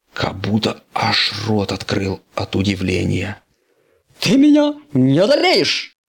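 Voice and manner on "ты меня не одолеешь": very high, loud, yelled cry. Startled as a rival lands right in front of him, a character: shouting. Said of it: "Закричал он".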